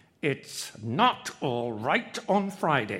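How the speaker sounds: said through gritted teeth. Narrator reading Mr. Allison's reply to Mrs. Allison, said between his teeth. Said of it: "said between his teeth".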